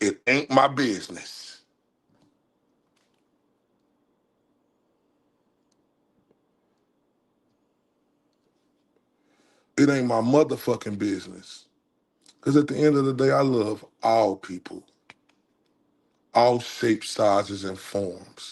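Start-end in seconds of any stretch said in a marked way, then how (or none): 0.0-11.6 flat-out, declarative, stated outright. Speaking to listeners about other people's lives, in a declarative voice. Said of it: "In my declarative voice".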